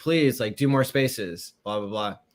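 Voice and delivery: ordinary talk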